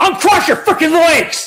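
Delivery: very high, shrill, very loud drill sergeant yell. Retelling a performer who walks out acting like a drill instructor: imitating a drill instructor. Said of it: "He speaks and acts just like a drill instructor".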